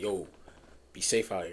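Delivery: put-on overly stern voice. Speaker imitates how a man said goodbye, retelling a stern warning. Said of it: "that be safe was a little too stern".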